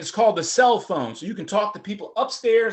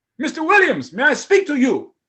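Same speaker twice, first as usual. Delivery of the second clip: put-on raised, pitched-up, polite Nigerian English accent; 8 semitones higher, 5 dB louder than usual. Retelling what a fellow prisoner said to him: imitating a nigerian accent. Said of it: "another Nigerian accent".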